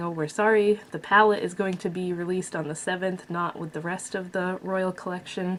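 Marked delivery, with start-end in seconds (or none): none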